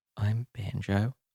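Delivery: wobbly, quiet voice. Shaking narrator introducing themselves to a room of people, wobbly and quiet. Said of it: "My voice is wobbly and so quiet".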